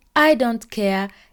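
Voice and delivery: ordinary delivery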